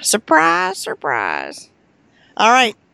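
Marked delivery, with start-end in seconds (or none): 0.0-1.7 high, swooping comic character voice. Signing off the podcast, imitating Gomer Pyle: Gomer Pyle impression. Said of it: "Did you just do Gomer Pyle?".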